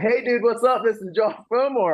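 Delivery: play-acted beaming, bursting, energetic voice, very high pitch. Retelling a cold call from an unknown number: imitating Josh's energetic voice. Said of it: "this incredibly energetic voice just comes beaming through".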